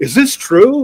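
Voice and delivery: high-pitched, mocking, dripping with sarcasm. Retelling questioning a planning department head: imitating his own sarcastic tone. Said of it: "I'm being all super sarcastic".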